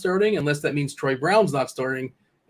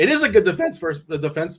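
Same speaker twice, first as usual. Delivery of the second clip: cracking, breaking voice; 3 semitones higher than usual. Discussing a player's defensive matchup ratings, voice cracking. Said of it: "did my voice just crack there".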